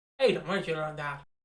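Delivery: plain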